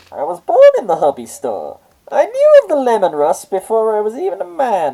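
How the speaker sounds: high squeaky villain voice. A co-host praises another's move, then speaks as Bane; Bane voice on helium. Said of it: "You sounded like Bane on helium".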